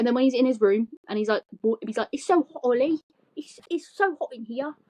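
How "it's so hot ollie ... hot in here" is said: put-on odd Australian accent, pitched up high. Acting out what he says when he's in his room, in a put-on accent. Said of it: "I don't know why I'm putting on an accent".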